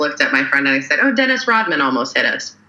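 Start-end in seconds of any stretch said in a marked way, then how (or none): 1.0-2.5 casual, matter-of-fact, nonchalant offhand aside. Recalling a near miss, the speaker repeats what they told a friend: retelling in a nonchalant voice. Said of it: "in like a nonchalant voice".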